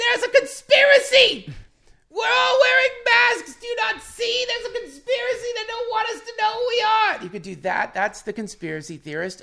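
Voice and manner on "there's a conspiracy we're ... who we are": shrill, very high, full-volume screaming rant. Acting out a conspiracy theorist running around a masquerade party: imitating someone screaming.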